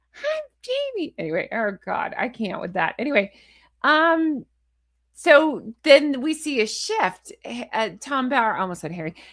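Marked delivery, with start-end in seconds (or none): 0.2-1.2 very high, squeaky, mocking baby talk. Mocking how a woman talks, imitating a baby voice. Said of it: "the Jamie baby voice".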